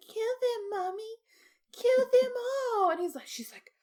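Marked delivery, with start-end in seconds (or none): 0.0-2.9 put-on very high-pitched little-boy voice. Describing a scene, the speaker acts out a mother voicing her late son, child Jason voice. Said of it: "So she does Jason's voice".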